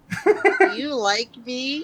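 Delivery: bad put-on schoolgirl voice, high, very slow. Granted one question on a podcast, the speaker asks it in worst attempt at schoolgirl voice. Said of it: "in the worst attempt of a schoolgirl voice".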